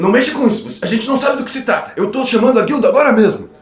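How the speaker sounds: very high nervous guard voice. Game narrator voices a guard pointing his drawn sword at a player, nervous guard voice. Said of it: "Você vê que ele tá muito nervoso".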